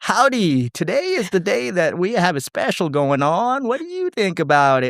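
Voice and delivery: fake Texan salesman accent. Recalling an old sales job, the speaker shows how they talked; put-on Texan accent. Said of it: "pretending to have, like, a Texan accent".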